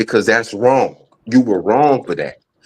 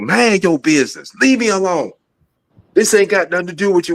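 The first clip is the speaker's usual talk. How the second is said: heated, fed-up, angry yelling, pitched up; 8 semitones higher than usual. Retelling telling off neighbours who came out to look: imitating own angry yelling. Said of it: "I was angry".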